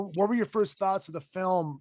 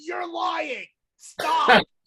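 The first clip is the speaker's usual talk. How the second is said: high, laughing yell. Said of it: "I'm yelling".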